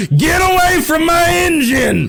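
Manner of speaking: angry, shouted character voice.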